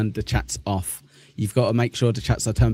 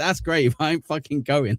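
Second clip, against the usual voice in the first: put-on, rude, fed-up, irritated, pitched-up tone; 5 semitones higher than usual. Retelling the missus's reply to the father-in-law's suggestion: imitating someone getting shitty. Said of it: "getting really shitty with him".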